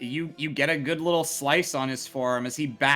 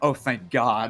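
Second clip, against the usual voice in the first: low mutter under her breath, mumbling to herself; 2 semitones lower than usual. Voicing a woman character as another's turn comes, muttering under her breath. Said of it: "she mutters like".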